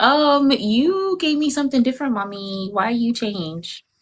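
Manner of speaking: voice of a talking dog. Joking about how dogs react to a treat, voicing a dog's thoughts. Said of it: "They're like".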